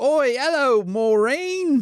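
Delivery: put-on English accent in a very high voice. Greeting someone on a podcast, in an English accent. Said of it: "this accent you're doing is pretty offensive".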